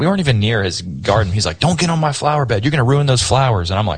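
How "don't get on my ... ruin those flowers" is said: put-on high, shrill yell from a man. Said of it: "he's yelling at my wife".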